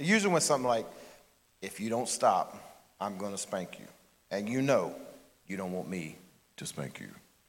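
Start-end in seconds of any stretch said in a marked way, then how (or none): 1.6-7.1 put-on low-pitched voice. Imitating his dad from childhood, in a low-pitched voice. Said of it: "He'd get that low pitch".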